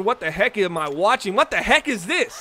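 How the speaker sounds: ordinary talk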